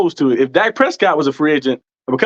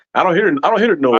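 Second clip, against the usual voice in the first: ordinary delivery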